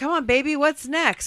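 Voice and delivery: creepy cheering, very high-pitched and loud. Retelling a dad cheering his daughter on: imitating a creepy cheering dad. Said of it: "he gets, like, creepy and he's like".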